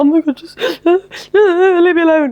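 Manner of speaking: acted sobbing, pleading, very high and very slow. Imagining being surprised by a partner in a balaclava: mock crying. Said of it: "I'd probably just, like, cry and be like".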